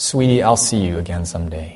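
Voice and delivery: put-on tearful voice. Retelling a father's goodbye to his daughter at the lifeboat, imitating a tearful goodbye. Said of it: "he said with tears in his eyes".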